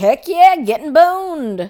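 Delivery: loud, high gung-ho whoop, eager shout. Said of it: "she's like".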